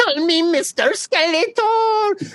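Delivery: shrill, very high, very slow, drawn-out cartoon villain voice. Imagining an actor playing Skeletor who demands a title: imitating Skeletor's voice. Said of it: "You have to call him Mister Skeletor?".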